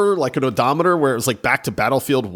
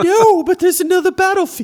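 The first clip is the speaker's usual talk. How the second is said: very high, weird put-on voice; 4 dB louder than usual. Acting out a hopeful brain voice about a new game: put-on Dobby voice. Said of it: "don't ask me what this voice is".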